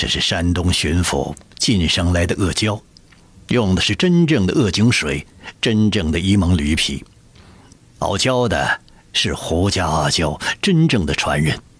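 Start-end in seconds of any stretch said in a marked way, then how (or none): none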